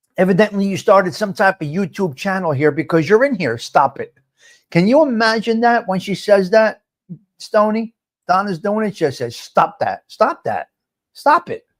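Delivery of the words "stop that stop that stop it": put-on strict, stern scolding with swooping pitch. Imitating how Donna scolds, like a teacher with a ruler: imitating Donna's scolding. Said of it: "Like a teacher with a ruler cracking you".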